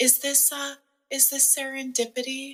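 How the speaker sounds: hushed, hesitant, timid, high half-whisper. Retelling how shy customers walked in, imitating a timid half-whisper. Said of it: "whisper and kinda, like, slowly walk in like a timid little bird".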